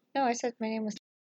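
hushed, very quiet, soft, placid voice. Podcast host repeating her name to a co-host who misheard it: speaking very quietly. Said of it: "She's speaking very quietly today".

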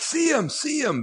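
put-on, very high-pitched calling-out shout. Retelling seeing a player start to make a run: imitating own yell.

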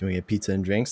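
imitated quiet whisper. Retelling what his date said near the end of mass, whispered real quietly. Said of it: "she like whispered like real quietly".

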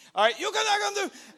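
put-on very loud, high Peruvian accent. Retelling what the people stopping the bus said: Peruvian accent. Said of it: "That's my accent, Peruvian".

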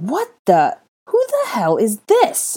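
loud, swooping, rising shout full of disgust. Draco, as a little boy clings to his legs calling him Daddy: disgusted shout. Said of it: "Draco shouted in disgust".

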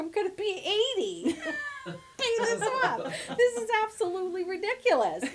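very high, laugh-filled, swooping sing-song. Speaker retells signing her house mortgage at fifty, retelling herself laughing. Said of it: "laughing, going".

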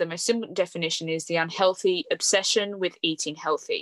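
normal talking voice

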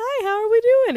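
cheery, chirpy, high-pitched and loud.

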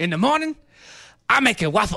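loud, high-pitched animated cartoon donkey voice. Talking about a donkey spirit animal, the speaker does a cartoon donkey voice. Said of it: "I was doing a donkey".

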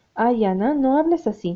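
plain reading voice

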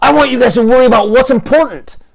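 put-on very high, shrill, grumpy old-man voice. Retelling his rant at the others, in a mock-grumpy old man voice. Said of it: "a grumpy, "Get off my lawn," old man voice".

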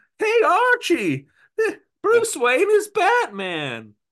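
very high, loud, slow cartoon voice. Acting out a man right in your face doing his voice: Top Cat voice. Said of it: "doing his Top Cat voice".

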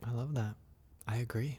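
drop into a very soft, hushed ASMR voice. Responding warmly to a guest's personal mantra: low ASMR-type voice. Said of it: "You went down low like the A S M R type voice".

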